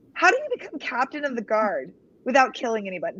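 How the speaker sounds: ordinary delivery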